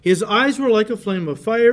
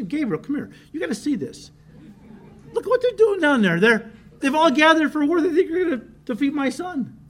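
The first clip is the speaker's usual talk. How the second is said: acted, high, chuckling, delighted heavenly voice; 7 semitones higher than usual. Imagining the Lord calling Gabriel to watch the nations: the Lord laughing at them. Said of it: "the Lord's up in heaven looking at this and laughing".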